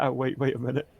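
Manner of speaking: ordinary talk, nothing marked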